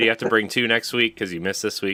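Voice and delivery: normal talking voice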